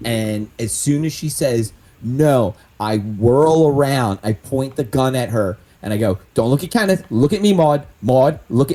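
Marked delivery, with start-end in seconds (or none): 6.3-8.8 hard, fast, very aggressive in-your-face menace. Actor in a scene pointing a gun at a woman who refused, very aggressive. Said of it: "and I'm being like very aggressive".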